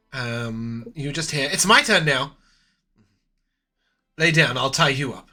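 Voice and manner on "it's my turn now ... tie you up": direct, eager, excited voice. Voicing an overheard speaker through a door: direct, excited voice. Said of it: "it sounds very direct".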